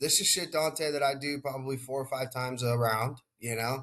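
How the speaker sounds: usual speaking voice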